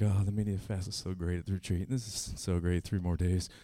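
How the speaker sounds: soft, dazed, groggy, zombified mumble. Retelling own past words while wandering around the house: imitating own zombie-like daze. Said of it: "So I'm zombieing around my house".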